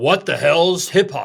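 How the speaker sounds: play-acted, big-voiced radio announcer voice. Retelling what a famous urban radio consultant said behind the glass, big booming voice. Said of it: "in a big booming voice".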